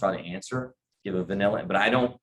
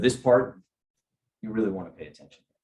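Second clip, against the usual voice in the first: earnest, weighty, grave tone. Showing how changing your tone works: serious, grave tone. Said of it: "you might get a little bit more serious in what you say".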